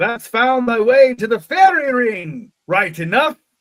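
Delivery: put-on high, loud, funny old rustic English accent. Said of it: "that funny accent that all the old people around have".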